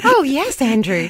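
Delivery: cute, high-pitched, friendly AI helper voice. A podcast host teases a co-host who uses Grok, imitating Grok's cute voice. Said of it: "she talks like".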